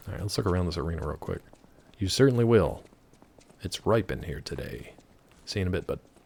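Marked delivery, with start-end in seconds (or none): none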